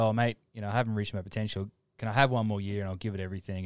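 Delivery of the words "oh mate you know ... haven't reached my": plain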